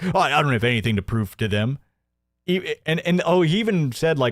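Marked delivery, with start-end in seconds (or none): none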